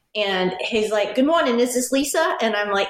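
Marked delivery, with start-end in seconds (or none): 1.1-2.3 put-on accent from the American Northeast. Speaker retells a police caller's phone greeting, in Michael Palmieri's heavy Northeastern accent. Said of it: "he's got this heavy Northeastern accent".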